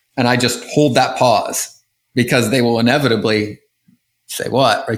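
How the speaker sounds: ordinary delivery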